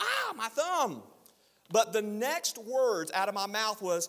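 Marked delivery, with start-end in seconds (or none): 0.0-1.0 put-on play-acted very high little-girl shriek. Retelling the moment a cab door slammed on his thumb, reenacting a shriek. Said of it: "I shrieked like a little girl".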